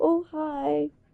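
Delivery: timid, shy, hushed little voice. Retelling how she once greeted someone: imitating own shy voice. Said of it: "I sounded so shy".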